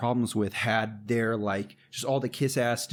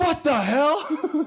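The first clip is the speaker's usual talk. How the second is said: mock indignant, outraged yell, very high pitched; 5 dB louder than usual. Retelling his reaction when they did not win the prize, retelling a yell. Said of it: "I just yelled out".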